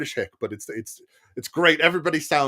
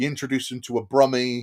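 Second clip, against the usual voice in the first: plain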